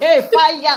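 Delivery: very loud, high-pitched shout. Showing the way people shout in church: church shout. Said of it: "the way we shout in church".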